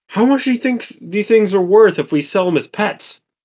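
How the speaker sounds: high, loud called-out shout.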